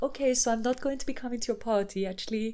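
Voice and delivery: soft, murmured, clumsy bad Russian accent. Retelling a show scene, quoting Yulia at the door in a bad Russian accent.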